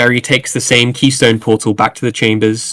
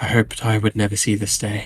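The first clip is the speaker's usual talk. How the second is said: muttering under the breath, much quieter; 7 dB quieter than usual. Narrating a scene, voicing a woman who mutters as she hands something over; muttering under her breath. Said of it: "mutter under her breath".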